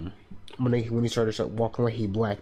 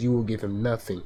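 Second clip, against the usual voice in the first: put-on commanding spirit voice. Retelling how Khonshu commands in the confrontation: Khonshu's direct command. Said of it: "he says it like this".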